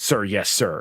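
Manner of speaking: dutiful, strict, by-the-book military manner. Describing how the Trooper characters answer higher ranking officials: acting out a by-the-book soldier. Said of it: "very by the book when I play".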